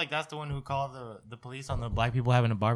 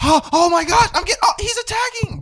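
very high, very loud, put-on panicked freakout; 12 dB louder than usual. Retelling a woman faking an attack on the phone to police: imitating a fake panicked call. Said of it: "She was just acting like he was attacking".

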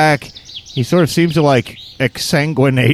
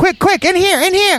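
goblin voice, much higher and slower. A game master voices a goblin calling the players into a cave: little furry goblin voice. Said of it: "a little furry goblin waves you into the cave".

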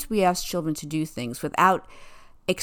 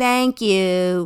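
loud, grudging, insincere, bratty tone, acted out; 6 dB louder than usual. Explaining insincere thanks, acting out a child saying it with a little attitude. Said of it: "the child says it with a little attitude like".

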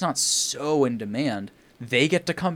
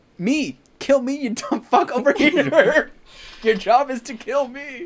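put-on, shrill, very high, drawn-out yelling; 13 semitones higher, 5 dB louder than usual. Retelling calling to a lost invader across the valley: retelling own shouting. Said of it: "With the emotion".

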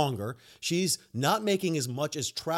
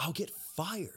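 put-on whisper, much quieter; 10 dB quieter than usual. Retelling a talk in Publix, the speaker quotes a woman's reply, imitating a whisper. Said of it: "why are you whispering?".

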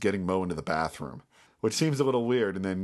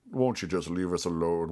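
acted sorrowful, downtrodden, put-upon pleading; 2 semitones lower than usual. Describing how an actor plays a guy in a scene, imitating a sad, put-upon guy. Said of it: "a very sort of sad, just like put upon".

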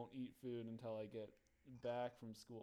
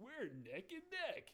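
dumb, silly voice, pitched very high; 14 semitones higher than usual. Recalling a video game racer who talks when you catch up: stupid voice. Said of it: "in like a stupid voice would be like".

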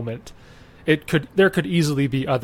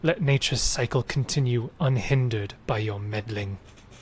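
enigmatic, mysterious forest spirit voice; 3 semitones lower, 5 dB quieter than usual. Voicing an unseen voice telling intruders to leave the forest: mysterious forest voice speaking common. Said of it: "And it says".

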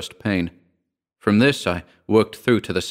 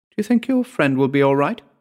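meek, hesitant, timid, pitched up; 5 semitones higher than usual. She asks the narrator a question after he speaks: timid question. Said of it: "she asked me timidly".

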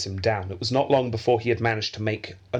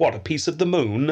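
mocking, sarcastic tone, pitched up; 5 semitones higher, 3 dB louder than usual. Recounting an exchange, quoting the British ambassador cutting in: retelling a sarcastic interruption. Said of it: "the British ambassador interrupted sarcastically and went".

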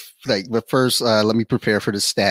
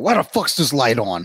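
put-on combative, belligerent, half-asleep outburst; 2 semitones higher than usual. Retelling what they say on Benadryl: imitating own belligerent talk. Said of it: "I just say belligerent shit".

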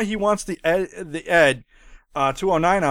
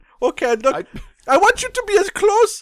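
squealy German-accented put-on voice, higher and louder; 14 semitones higher, 5 dB louder than usual. Playing the director asking people to scooch closer: squealy German Paul Verhoeven voice. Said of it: "a squealy German guy is what he now sounds like".

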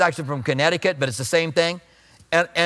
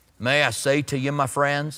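put-on country voice; 3 semitones lower than usual. Imitating a preacher who sounded country though he was smart: J. Vernon McGee country voice. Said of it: "had that really country voice".

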